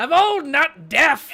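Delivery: shrill, very loud, high-pitched hollering. Voicing an old character answering a player's teasing, yelling in character. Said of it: "Then why are you yelling?".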